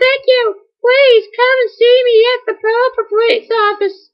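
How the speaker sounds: very high, weird put-on character voice. Reading a game character's dialogue aloud, in the weirdest character voice. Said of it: "That was the weirdest voice ever".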